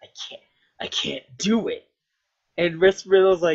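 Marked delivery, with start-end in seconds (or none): 0.0-1.8 put-on grunting game-hero voice. Retelling a game scene where the hero cannot walk: grunting as Snake. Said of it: "kinda grunts and grunts and goes like".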